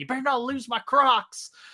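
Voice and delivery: screaming with voice way up high. Retelling how a best friend reacted during filming in a river, retelling a friend's scream. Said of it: "he just screams like".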